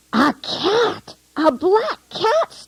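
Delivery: furious, very high-pitched, shrill, drawn-out scream. Reading a story aloud, a father spots a cat: angry scream. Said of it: "screamed Father angrily".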